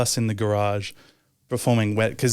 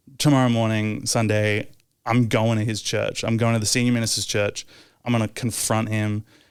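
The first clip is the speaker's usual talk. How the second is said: normal talking voice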